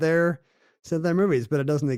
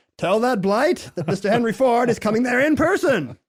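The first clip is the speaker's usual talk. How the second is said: put-on loud mid-Atlantic accent, pitched high. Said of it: "why does he talk like that?".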